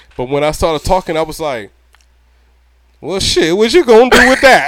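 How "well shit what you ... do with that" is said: very loud would-be gangster voice, pitched up. Retelling facing someone with a blade: imitating own failed gangster voice. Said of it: "I thought I sounded gangster".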